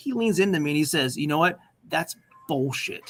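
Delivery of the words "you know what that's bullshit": put-on, utterly serious, grave tone with no joking. Retelling what someone in class said while leaning in: imitating a dead-serious tone. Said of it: "The most serious tone".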